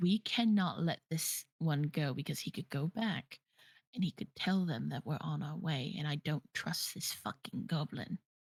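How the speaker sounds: low, hushed stage whisper. A player, in character, speaks to Pell about a goblin, half-whispering. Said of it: "I'm like whispering".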